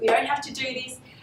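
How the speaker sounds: high-pitched, rapidly rattled-off, panicked delivery.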